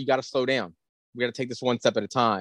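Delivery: ordinary delivery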